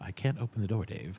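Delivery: put-on polite computer voice. Acting out the film computer refusing to open the door: polite HAL 9000 voice. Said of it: "he's just so nice".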